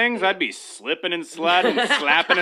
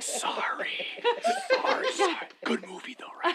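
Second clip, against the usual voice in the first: hushed whisper, higher and quieter; 13 semitones higher, 9 dB quieter than usual. Acting out apologizing to a stranger six chairs away at the movies: whispering.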